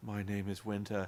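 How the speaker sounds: very low, quiet, hushed, flat robotic monotone. Retelling how a woman introduced herself, in a monotone robot voice. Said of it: "she was talking like a robot".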